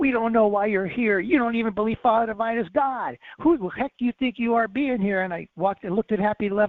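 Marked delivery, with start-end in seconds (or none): 0.0-5.2 mock screaming outburst at full force, very loud. Retelling how a carpenter screamed at him: imitating David Giles screaming. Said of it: "I hear him screaming at me".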